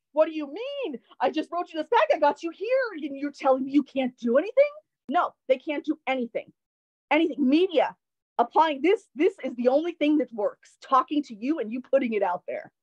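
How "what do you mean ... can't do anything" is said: put-on frustrated yell, higher. Retelling yelling at the FBI agent: imitating own past yelling. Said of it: "This is how I was yelling at him".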